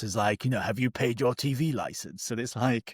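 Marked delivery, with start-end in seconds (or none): 0.6-2.3 put-on sinister advert-announcer voice. Recalling old TV Licensing adverts, imitating the announcer's mock-sinister TV Licensing advert voice. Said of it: "with his really like sinister voice".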